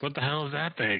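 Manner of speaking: stage whisper pushed like a shout. Voicing a character asking about a nest: shout-whisper. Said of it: "so instead I whisper, shout".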